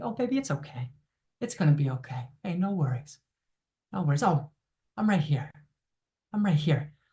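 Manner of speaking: soft, soothing, comforting voice. Demonstrating a warm presence comforting a little one, in a soothing voice. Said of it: "There's a soothing voice".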